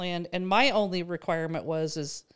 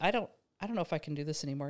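soft, very sad, defeated voice; 2 semitones lower, 5 dB quieter than usual. Retelling what a husband said one morning: imitating a sad, defeated voice. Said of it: "he was so sad, so defeated".

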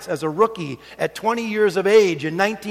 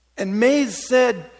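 ordinary delivery

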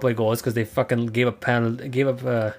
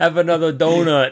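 angry yell, higher and louder; 5 semitones higher, 5 dB louder than usual. Retelling a hockey flip-out in a hallway: imitating Jim Playfair yelling. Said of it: "that one guy who yelled at the refs".

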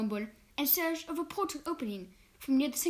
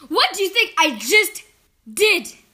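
full-volume shout, very loud; 4 semitones higher, 14 dB louder than usual. In a heated argument, one man shouts at another, shouted. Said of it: "Strange shouted".

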